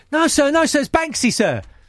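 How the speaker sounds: put-on pleading high kid voice. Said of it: "'cause he'd be like".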